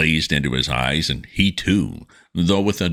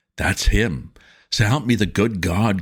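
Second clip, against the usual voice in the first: strangled, half-choked, dread-struck cry of horror; 4 semitones higher than usual. A guide sees something crash onto the frozen earth below, in a half-choked whispering cry. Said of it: "It was [name], / by springing suddenly to his feet and letting out the most ear-shattering yell imaginable into the night. / and faced the excited guide. / Uh, there was a vehemence and recklessness a".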